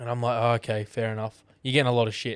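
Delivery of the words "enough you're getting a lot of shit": ordinary talk, nothing marked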